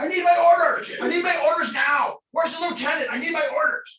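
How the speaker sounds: shrill, very high-pitched, loud screaming. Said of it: "he's screaming at the wall".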